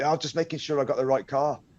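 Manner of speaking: put-on, unconvincing dodgy Scottish accent. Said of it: "a dodgy Scottish accent".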